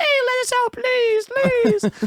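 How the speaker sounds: tiny very high squeaky gnome voices, pleading. Voicing gnomes begging to be let out: voicing gnomes begging. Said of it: "it's a bunch of gnomes like".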